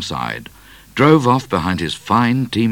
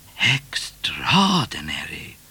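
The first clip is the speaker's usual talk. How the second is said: murmuring, greatly surprised; 5 dB quieter than usual. Cat replies to news just brought to the YMCA, murmured in great surprise. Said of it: "murmured Cat in great surprise".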